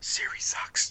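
mock hushed assistant voice. Joking about what Alexa says about Siri, whispering as Alexa. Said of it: "And she whispers".

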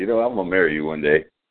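ordinary talk, nothing marked

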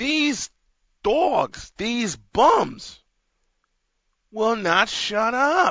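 slow, drawling put-on New York accent. Complaining that the dogs won't shut up, in a Mike Francesa New York accent. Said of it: "Let me get a little Mike Francesa New York accent going here".

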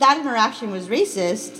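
normal talking voice

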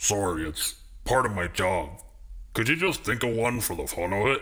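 rough, gruff voice. A voice behind a door peephole answers a visitor about a password; gruff voice. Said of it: "The gruff voice called back".

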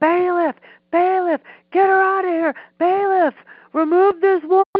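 very high, shrill, loud screaming. Telling of a courtroom hearing, the speaker acts out the judge: retelling a judge screaming. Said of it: "the judge now is screaming".

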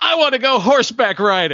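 sudden, very high, shrill shouted outburst. Recapping a favorite TV scene, the speaker retells Craig's line: retelling Craig's yell. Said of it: "And Craig just yells".

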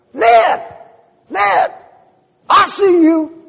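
very high, very loud, slow, drawn-out calling yell. Retelling how the nurse called to an old man: imitating someone yelling. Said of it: "she yells at him".

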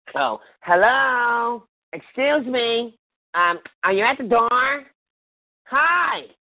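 slow, exaggeratedly polite tone.

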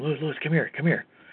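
soft, hushed half-whisper. Retelling a court clerk waving him over: imitating someone half-whispering.

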